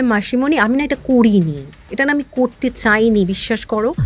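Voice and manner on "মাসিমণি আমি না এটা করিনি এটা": plain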